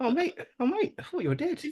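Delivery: gentle, very high-pitched voice. Quoting a loved scene where a character thinks his mate is dead: gentle Korg voice. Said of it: "Such a gentle voice for".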